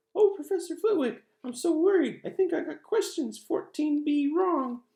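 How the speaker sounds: very high, shrill, loud put-on mocking voice. A boy acts out his friend's excuse to a professor, in a put-on high voice. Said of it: "He put on a high voice".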